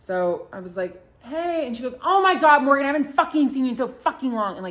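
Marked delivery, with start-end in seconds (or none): 2.0-4.5 very loud, high-pitched delivery. Retelling a coworker's greeting at a nice steakhouse: imitating someone cursing really loud. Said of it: "really loud like that".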